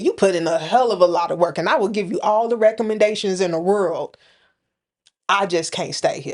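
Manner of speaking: plain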